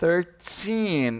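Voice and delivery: put-on thirteen with strong stress on -teen. Portuguese lesson comparing treze to English numbers: stress on teen in thirteen. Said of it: "no sufixo teen, eu vou frisar essa tonicidade".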